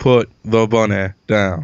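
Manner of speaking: scary, menacing put-on movie-star voice. Doing a requested impression of a line from Con Air: Nicolas Cage impression. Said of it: "my, uh, Nick Cage impression".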